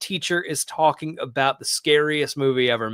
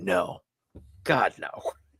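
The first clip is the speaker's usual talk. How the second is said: whispered, breathy, scornful and disdainful; 6 semitones lower, 7 dB quieter than usual. Retelling a teacher's answer to a wrong guess: imitating a teacher's disdainful reply. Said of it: "just disdain".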